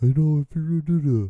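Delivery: high-pitched fresh character voice. On the podcast, trying out a voice never done before, like Barney. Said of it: "it's a new voice. I've never done that voice before".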